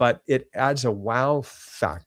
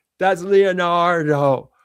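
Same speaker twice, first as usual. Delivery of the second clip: put-on high, loud little kid voice; 6 semitones higher, 7 dB louder than usual. Retelling a meeting with someone showing him things, imitating his voice. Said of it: "his voice is kind of like, you know, like this".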